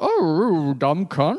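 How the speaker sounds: voice of a cartoon dog. Joking about being dunked on by the Harlem Globetrotters: Scooby-Doo voice. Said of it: "that was me as Scooby-Doo".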